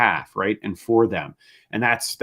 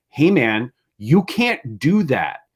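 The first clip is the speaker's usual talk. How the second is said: mock, very slow, heated, angry scolding; 4 semitones higher than usual. Retelling calling up a good friend and yelling at him, retelling angry yelling. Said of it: "I called him up and I yelled at him".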